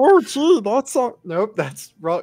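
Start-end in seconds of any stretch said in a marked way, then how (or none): 0.0-1.2 very high, loud, slow, drawn-out, botched frog voice. Attempting the voice a buddy suggested, a failed Kermit voice. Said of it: "I'm trying to do a Kermit voice".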